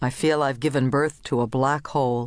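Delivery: plain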